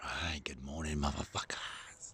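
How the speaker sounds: whispered, hushed voice. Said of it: "I'm not gonna be talking too loud".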